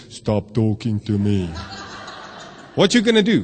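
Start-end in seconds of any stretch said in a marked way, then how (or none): 0.1-1.5 silly put-on demon voice, low and slow. A preacher imagines someone suddenly speaking up while hearing the gospel: funny voice. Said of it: "this funny voice says".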